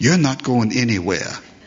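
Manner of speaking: put-on little, small childlike voice. Recalling what she'd say when I got ready to leave: little Chloe voice. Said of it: "in her little Chloe voice".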